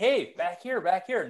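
shouting. Retelling calling back teammates leaving the zone in a hockey game: retelling a yell. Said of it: "I'm yelling like".

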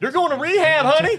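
shrill yelling at very high pitch. Speaking to a companion in front of other people, yelling. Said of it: "why you gotta yell at me".

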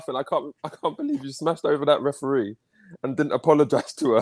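words broken up by laughing. Teasing another speaker about a referee: laughing while talking. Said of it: "I'm still laughing".

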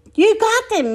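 high, excited cow voice crying out. Narrator reads Moo's line as Minnie swats with the fly swatter, crying out. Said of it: "Moo cried".

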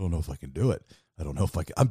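put-on nervous voice. Recalling the moment before speaking to a musician, retelling being nervous. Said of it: "I'm so nervous".

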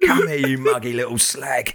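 menacing, aggressive, put-on football-terrace hooligan bark. After joking that he sounds like Millwall away fans, say it in a mock-aggressive football hooligan voice. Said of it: "Sheep in Stone Island jumpers".

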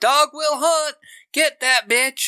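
very high, shrill, screamed villain voice. Retelling a horror-movie character's line shouted at another character: imitating someone screaming. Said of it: "he's screaming at Leatherface".

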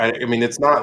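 ordinary delivery

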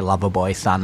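normal talking voice

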